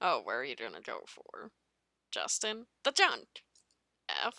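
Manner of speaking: very low, sing-song, swooping sarcastic taunting.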